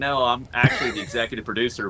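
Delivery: ordinary delivery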